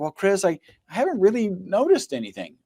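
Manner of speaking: mock sheepish, letdown, high swooping tone. Retelling a customer's reply about noticing no effect: imitating someone speaking sheepishly. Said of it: "very kind of sheepishly and did, disappointingly was like".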